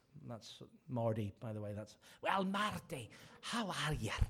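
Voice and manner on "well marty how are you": not very good put-on Scottish preacher accent. Retelling how a Scottish evangelist greeted him after preaching: imitating John Spears' Scottish accent. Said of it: "that's my Scottish".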